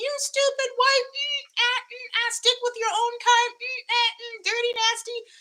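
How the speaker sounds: piercing, very high, shrill screaming. Retelling drivers screaming insults on the highway: imitating screaming. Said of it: "run into me screaming".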